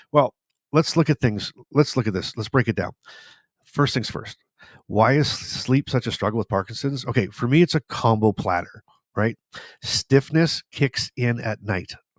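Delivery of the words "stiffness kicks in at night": very slow, drawn-out, deliberate, word-by-word delivery. A speaker talking about sleep with Parkinson's says this part really slow. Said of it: "I'm going to said that really slow".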